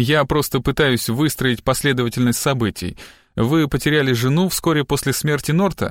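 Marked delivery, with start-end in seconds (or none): none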